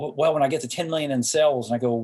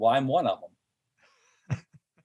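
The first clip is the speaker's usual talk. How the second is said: put-on deadpan delivery. Retelling own answer to a question about the logo: retelling a deadpan reply. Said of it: "And I literally deadpan".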